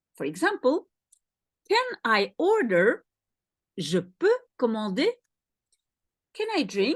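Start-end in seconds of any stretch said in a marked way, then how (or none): 3.8-5.1 pitch rising at the end on "commander". An example in a French lesson, said with rising question intonation. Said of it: "You use the intonation of a question".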